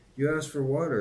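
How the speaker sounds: humble, sheepish tone. Reading a story, one character answers another who just bellowed at him, meekly. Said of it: "said Lurvy meekly".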